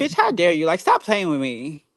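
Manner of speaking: fed-up, in-your-face aggravated tone, swooping pitch. Retelling confronting someone who asked for pizza: imitating own aggravated retort. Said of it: "so aggravated with him, and I kinda got in his face".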